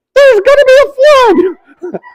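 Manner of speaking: squeaked out, high and loud. Retelling a made-up story where Asher plays Noah telling everybody: Mickey Mouse voice. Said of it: "speaks like Mickey Mouse all of a sudden".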